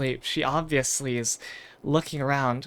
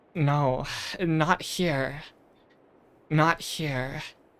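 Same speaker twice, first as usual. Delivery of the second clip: breathless, slow, breath caught, near hyperventilating. The guide shakes her head at tracks in the sand and warns the group; Sarah Deerskin, breath caught. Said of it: "and then [name], the guide. / [name] shakes her head and says, / the guide. / Her breath almost seems caught. She looks about to start hyperventilating".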